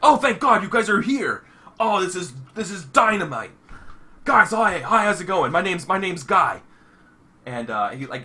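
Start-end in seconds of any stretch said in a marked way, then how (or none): 0.0-6.6 bubbly, thrilled, excited and delighted delivery. Voicing a panicked host who greets the arrivals: excited. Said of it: "He's like".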